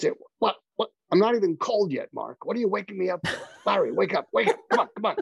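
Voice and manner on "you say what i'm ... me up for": put-on New York accent, pitched much higher. Acting out calling up a late mentor, Larry's New York accent. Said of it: "he had this New York accent".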